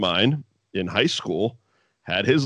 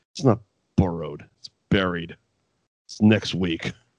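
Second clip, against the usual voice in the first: mock scornful, total disdain, withering; 4 semitones lower than usual. Retelling a wrestling segment, correcting another wrestler: imitating the Undertaker with disdain. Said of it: "looks at him with all disdain in the world and goes".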